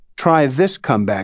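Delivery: ordinary delivery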